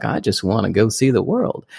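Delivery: put-on heavy, thick Mississippi accent, laid on. Quoting a film's lead character as he sets off on a journey, in a thick Mississippi accent. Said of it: "like a Mississippi accent".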